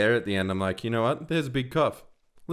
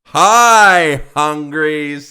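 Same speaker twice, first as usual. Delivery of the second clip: more energetic, slower, much louder; 5 semitones higher, 13 dB louder than usual. Coaching the other speaker on the greeting, more energetic and slower. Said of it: "Less lame".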